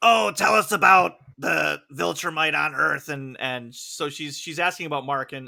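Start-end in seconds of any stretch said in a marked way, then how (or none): 0.0-3.1 put-on lizard lady voice, raised and creaky. Retelling a scene from the show in a put-on lizard lady voice. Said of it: "in her best lizard lady impression".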